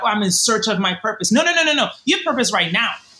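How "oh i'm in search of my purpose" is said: ordinary delivery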